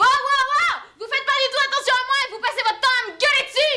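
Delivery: put-on high, fast yelling teen outburst.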